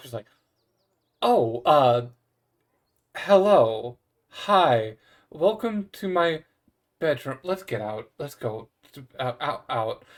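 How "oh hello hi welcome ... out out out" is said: stiff, loud, slow, flustered, caught-off-guard voice. Voicing Tara greeting guests, then hurrying them out: Tara flustered and stiff. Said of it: "Tara just, like, stiffens up".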